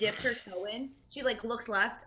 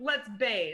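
grave, very serious, dead-serious, solemn delivery. Proposing that the group go bathe, in a very serious tone. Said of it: "That sounded so serious".

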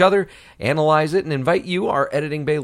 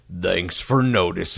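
heroic robot leader voice, pitched lower; 7 semitones lower than usual. Recalling a cartoon watched with her, in an Optimus Prime voice. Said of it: "I just hear Optimus Prime's voice going".

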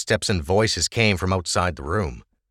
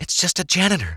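half-whisper, much higher; 10 semitones higher than usual. Watching an aging man enter through a hidden door, half-whispered. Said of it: "Ava whispered".

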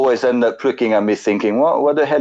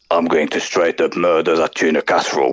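very deep English-accented superhero voice; 7 semitones lower than usual. Trying out accents with friends, first up: English Batman voice. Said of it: "my first accent I'm going to attempt is Batman".

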